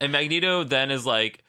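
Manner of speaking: ordinary talk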